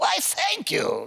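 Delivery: high-pitched, slow, stretched-out voice.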